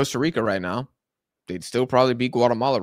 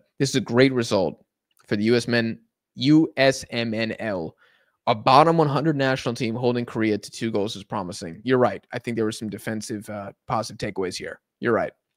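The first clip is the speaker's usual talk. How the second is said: usual speaking voice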